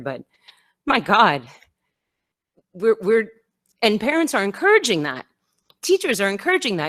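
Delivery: high, swooping voice welling with emotion. Speaking against children shaming each other over masks, getting emotional. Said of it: "I'm trying not to get emotional here".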